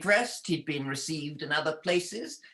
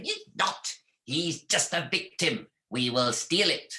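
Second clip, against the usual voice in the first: put-on greedy, scheming old witch voice. Telling a story, the narrator answers the young witch as the old witch, in an old witch voice. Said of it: "And the old witch wanted both his cloak and his heart. / An aged and very ugly woman with a nose that came down almost to her chin welcomed him. / An aged and very ugly woman with a nose that came dow".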